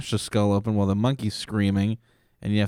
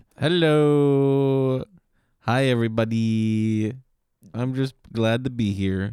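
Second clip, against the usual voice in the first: put-on accented voice with a stretched, drawn-out "hello"; 3 semitones higher than usual.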